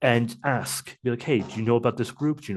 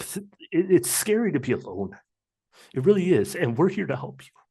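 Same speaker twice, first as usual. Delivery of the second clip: pitched-up voice choking up, breaking with tears; 5 semitones higher than usual. Urging listeners to reach out for help, the speaker is choking up. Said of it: "sorry if I get a little cry a little bit".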